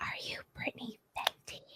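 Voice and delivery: secretive, very hushed whisper, barely voiced. Retelling what a woman at the store register asked, imitating her whisper. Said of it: "Like, whispered it".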